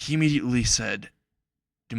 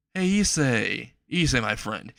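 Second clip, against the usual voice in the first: ordinary delivery, nothing marked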